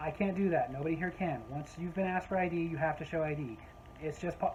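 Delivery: plain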